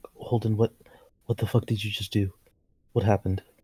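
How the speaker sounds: low, hushed voice. A player speaks as Rose to Holden in the game, Rose, lowered voice. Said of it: "Rose would kind of like like lower her voice".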